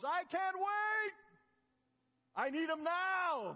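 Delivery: put-on very high, very slow, loud, drawn-out yell. Retelling how a man in the front row jumped up: imitating a man yelling loudly. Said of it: "yelled out in a loud voice".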